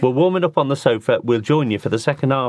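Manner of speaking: ordinary talk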